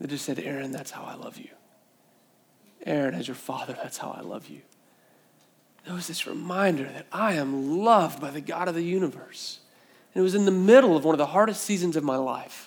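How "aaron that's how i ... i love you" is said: hushed, very still, small whisper. Retelling a voice heard while holding a newborn son: very still, small voice. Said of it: "this very still and very small voice".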